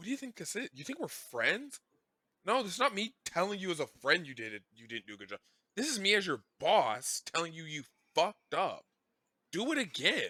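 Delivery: mock angry, mad ranting tirade. Retelling a scene where a boss scolds his writer: imitating angry BoJack. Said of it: "we haven't seen him get mad, like, angry mad".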